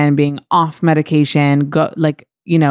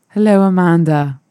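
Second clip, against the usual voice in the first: put-on English accent, a game attempt; 3 semitones higher than usual. Pressed by the host to try it, saying a greeting: british accent. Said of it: "Can you do the English accent?".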